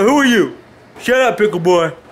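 put-on grandpa-style old man voice. Telling a story, the speaker plays grandpa snapping at Pickleboy, imitating grandpa. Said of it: "I'm being grandpa".

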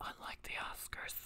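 soft, slow, sly whisper under the breath.

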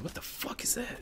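high, breathless, startled whisper.

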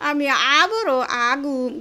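put-on slow whiny child voice.

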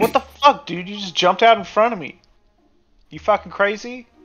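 furious. Game master voices a cyclist confronting someone who jumped in front of him: pissed-off, angry. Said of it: "He's pretty pissed and he's the violent sort".

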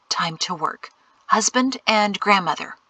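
ordinary delivery

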